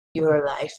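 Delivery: said under the breath. Speaking in character to her so only she can hear: under the breath. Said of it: "it just under my breath".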